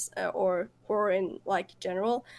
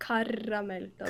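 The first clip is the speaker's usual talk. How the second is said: smooth native Swedish pronunciation, quieter; 5 dB quieter than usual. Saying a Swedish word again when asked: smooth Swedish pronunciation. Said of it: "Say it again".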